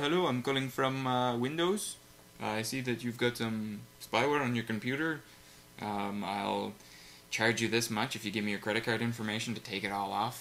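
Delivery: put-on speaking with an Indian accent. The speaker imitates a scam phone caller from a few months back; indian accent. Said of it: "with Indian accents".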